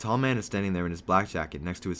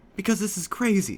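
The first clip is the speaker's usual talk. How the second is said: whispering and yelling at once. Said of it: "Now you're whispering and yelling at the same time".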